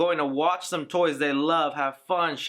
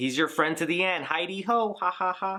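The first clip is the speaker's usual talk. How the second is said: awkward, stretched toy voice. Quoting the original Good Guy doll's marketing line: horrible Good Guy doll impression. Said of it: "That's a horrible impression".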